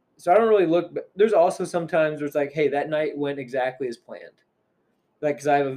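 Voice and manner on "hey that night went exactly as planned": usual speaking voice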